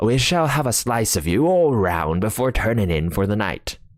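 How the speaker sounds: ordinary delivery, nothing marked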